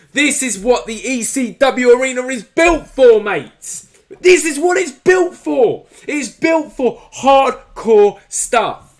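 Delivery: excited, high, loud, hyped-up yell.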